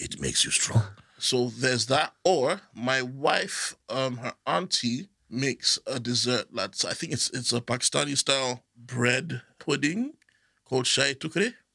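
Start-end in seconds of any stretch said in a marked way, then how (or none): 0.0-0.8 hard, harsh-sounding delivery. Showing how the dessert's saying should be said, in a harsh voice. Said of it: "Harsh voice".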